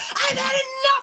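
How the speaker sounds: put-on, very high, shrill screaming outburst. The speaker recounts having had enough and screaming back at her: retelling own screaming. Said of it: "and I'm screaming back at her".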